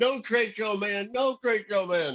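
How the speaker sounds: very high, shrieked, frantic, desperate scream. Recounting holding a man over the side of an atrium, retelling a scream. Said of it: "I'm screaming".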